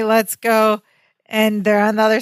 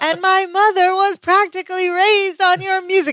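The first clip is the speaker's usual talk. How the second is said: put-on gushing scream, high and excited; 9 semitones higher than usual. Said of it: "He's yelling".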